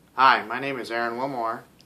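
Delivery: sounding like a robot. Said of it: "I sound like a robot".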